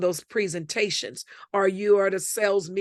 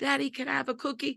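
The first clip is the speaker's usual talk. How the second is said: put-on little girl voice, quieter; 6 semitones higher, 6 dB quieter than usual. Describing a girl approaching her father, the speaker is imitating a little girl's tone. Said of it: "How did she know the tone?".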